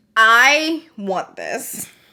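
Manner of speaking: very slow, loud, deliberate, drawn-out delivery. Reviewing a palette and thinking it through out loud, very, very slowly. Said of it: "I'm saying it very, very slowly".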